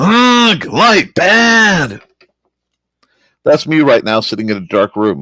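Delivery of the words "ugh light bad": "bad" said high, loud and drawn out. Joking to Joe about how he feels every morning: Frankenstein's monster voice. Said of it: "Frankenstein monster voice".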